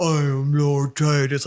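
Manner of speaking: deep, very slow, grand voice, every word drawn out. Acting out a character's big line, in a deep Lord Titus voice. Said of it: "like this deep voice".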